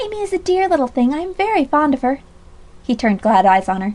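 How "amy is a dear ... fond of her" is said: very high-pitched, full of sympathy. A young woman replies to a man, full of sympathy. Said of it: "full of sympathy".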